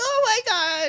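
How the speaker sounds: very high, excited, gushing puppy voice. Streamer describes reacting when viewers' pets appear on camera: ridiculously high-pitched voice. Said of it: "ridiculously high pitched".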